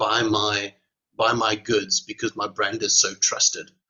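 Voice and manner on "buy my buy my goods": plain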